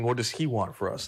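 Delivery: plain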